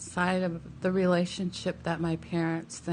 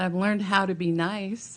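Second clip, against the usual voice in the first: ordinary talk, nothing marked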